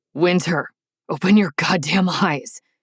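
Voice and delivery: choked, strangled, pained and angry voice. Narrator reading King's line to Winter, strangled, angry pained demand. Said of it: "The voice comes out in a strangled, pissed-off demand that's filled with pain and emotion".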